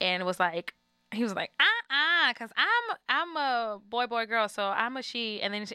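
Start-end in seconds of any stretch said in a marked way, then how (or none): 1.6-5.4 ridiculously sassy, swooping, very slow and drawn out. Retelling a cartoon character's reply: imitating sassy Sharzar. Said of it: "really ridiculously sassy".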